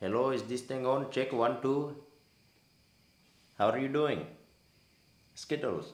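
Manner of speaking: loud, high-pitched, put-on Indian accent. Asked to redo an accent, a speaker tries it into the mic: indian accent. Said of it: "it was an Indian accent".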